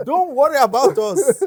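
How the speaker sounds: high, loud, mock hype man cheering.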